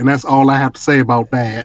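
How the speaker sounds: plain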